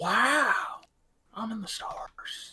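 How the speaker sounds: very slow, breathy, relaxed laid-back drawl. Joking about a Circle of Stars druid: Owen Wilson voice. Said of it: "are you just doing McConaughey voice or Owen Wilson voice there?".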